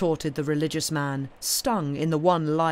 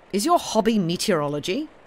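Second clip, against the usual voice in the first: plain reading voice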